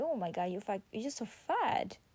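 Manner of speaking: harsh, blunt, ungentle, judgmental tone. Showing the unkind way to tell someone something: a little judgmental, not gentle. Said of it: "in a not really gently kind of a way ... Like in a little bit judgmental thing".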